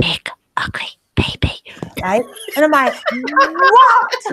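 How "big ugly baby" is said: hushed, breathy whisper. Retelling what Bear whispered, whispered. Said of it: "whispering like this".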